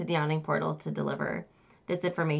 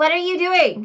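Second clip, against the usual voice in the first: very high-pitched, very loud outburst; 12 semitones higher, 8 dB louder than usual. Narrating a scene, voicing a startled man caught with his pants down, in a higher-pitched voice. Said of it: "Says a, a higher a higher pitched voice coming out of this man's body".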